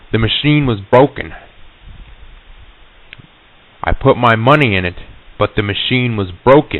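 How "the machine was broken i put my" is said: ordinary delivery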